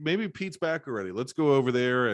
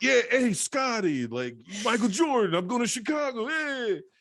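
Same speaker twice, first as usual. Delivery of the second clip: put-on very high-pitched voice with a hint of Brooklyn accent; 11 semitones higher than usual. Imitating how the good-guy character talks in early scenes, borderline brooklyn accent. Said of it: "he still kind of has like a borderline Brooklyn accent".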